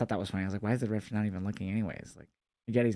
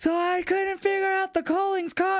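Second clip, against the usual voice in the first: very high, loud shouting yell; 6 dB louder than usual. Retelling a story, the speaker acts out a character yelling over car alarms: retelling a yell. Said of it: "So then Shiloh starts yelling".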